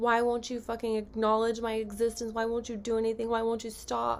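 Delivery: ordinary talk, nothing marked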